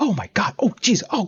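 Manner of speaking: high, gasping amazement.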